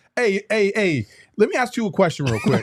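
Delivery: put-on voice, high and swooping. Doing an impression of Flex after asking the others first: Flex impression. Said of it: "can I do the Flex impression?".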